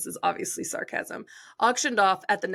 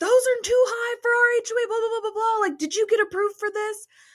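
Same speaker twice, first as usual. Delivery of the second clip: shrill, very high screaming rant; 14 semitones higher, 3 dB louder than usual. Retelling how an HOA board member jumped out of his car: imitating a man screaming. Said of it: "jumps out of his car screaming".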